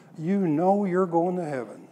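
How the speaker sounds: doubtful, incredulous tone full of disbelief. Retelling how a young man questioned him: imitating someone asking incredulously. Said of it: "this young man said incredulously".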